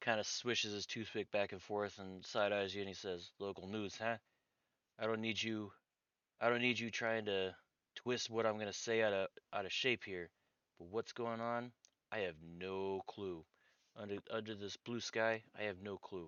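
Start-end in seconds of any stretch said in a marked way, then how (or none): 3.4-16.3 put-on, pure Brooklyn accent. A man approached by a local news reporter answers the questions in a Brooklyn accent. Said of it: "I don't know why he's got a Brooklyn accent".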